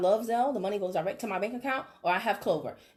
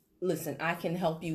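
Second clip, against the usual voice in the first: authoritative bass voice, much lower, quieter; 3 semitones lower, 4 dB quieter than usual. Demonstrating the shift from a high relatable voice, low authoritative bass voice. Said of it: "down authoritative ... bass type voice".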